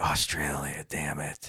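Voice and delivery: muttering under breath. Retelling how his wife reacts while watching the news, mumbling under her breath. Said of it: "She will like mumble under her breath".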